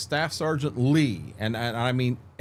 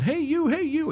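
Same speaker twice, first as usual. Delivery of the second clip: put-on drill sergeant yelling, higher; 14 semitones higher than usual. Retelling a sergeant walking among recruits: imitating a sergeant yelling. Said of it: "He's yelling".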